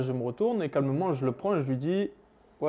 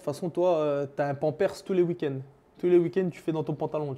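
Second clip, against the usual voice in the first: ordinary talk, nothing marked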